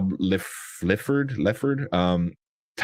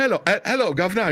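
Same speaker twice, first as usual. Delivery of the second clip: bad, clumsy fake British accent, pitched up; 12 semitones higher than usual. Speaker describes a skit of an actor preparing for a role, with Ben Affleck's shitty British accent. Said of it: "like one word with like a shitty British accent".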